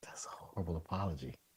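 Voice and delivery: barely audible hushed whisper. Giving a first quick verdict on an apology: whispering. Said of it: "You don't have to whisper it".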